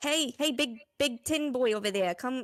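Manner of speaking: put-on broad-vowelled Australian character accent. Calling someone over in a role-play scene, in an australian accent. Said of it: "I've swapped to a different accent".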